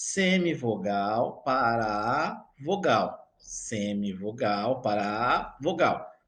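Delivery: semivogal para a vogal said slowly, deliberately.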